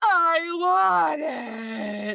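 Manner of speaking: put-on sobbing little kid's voice, bawling, "it" stretched out. Recalling a library visit as a boy sat at her feet: imitating Leo bawling. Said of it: "he's just sitting at my feet bawling".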